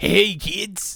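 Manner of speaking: raspy voice, loud and high. Showing the others a Krusty the Clown voice. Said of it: "I thought you were doing Krusty from The Simpsons".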